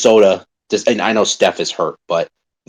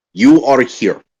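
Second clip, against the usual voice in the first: really bad, clumsy, put-on Serbian accent; 4 semitones higher than usual. Acting out a basketball coach in a timeout: bad Serbian accent imitating Jokic. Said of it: "I'm gonna do my really bad s-, the, the, him in the timeout".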